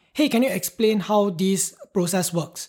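ordinary talk

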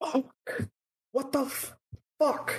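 very high-pitched, stretched-out, drawn-out voice. Voicing a character who just lost the door: character yelling curses.

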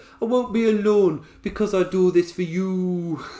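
put-on high, slow Scottish accent, "you" stretched out. Quoting a wrestler's line in a put-on Scottish accent: Nikki Cross Scottish accent. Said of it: "I say in my amazing Scottish accent".

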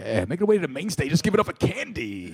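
mock strip club DJ announcer voice. A guest at the microphone, after the host jokes about his delivery: strip club DJ voice. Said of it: "talk like a strip club DJ".

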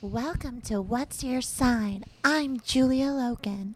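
high, fake, put-on babyish voice. Podcast host opening the show's intro, in a fake baby voice. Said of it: "We heard the demand for baby voices".

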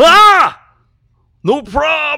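very high, very loud alien voice. Talking about Alf in a Marvel movie, the speaker breaks into an Alf impression. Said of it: "That's my Alf impression".

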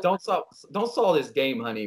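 normal talking voice

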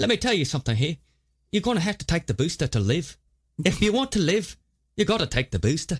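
put-on light touch of Irish accent. Imitating the speaker in a video clip about the booster: slightly Irish accent. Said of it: "I feel like that's a little Irish".

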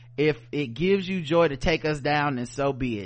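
plain

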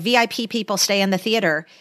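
ordinary talk

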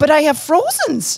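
high-pitched put-on Midwestern accent. Retelling being questioned, the speaker quotes their own reply, imitating a Midwestern accent. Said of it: "my voice comes from the Midwest".

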